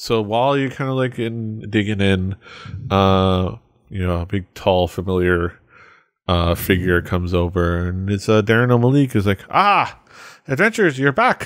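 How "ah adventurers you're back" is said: very high put-on character voice and accent. Voicing a figure greeting the adventurers: Darren O'Malik accent voice. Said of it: "what accent I gave him".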